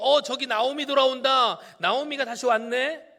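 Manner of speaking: high, loud, surprised calling out.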